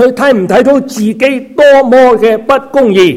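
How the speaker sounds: high, loud, scornful, contemptuous tone. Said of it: "就好輕蔑嘅同我講".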